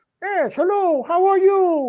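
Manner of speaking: very high, drawn-out hand-puppet voice. Explaining who a ventriloquist was, doing a Senor Wences impression. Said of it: "And he would just talk like that".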